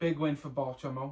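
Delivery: put-on English accent. Announcing a win in an english accent, put-on english accent. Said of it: "After trying to say Baltimore".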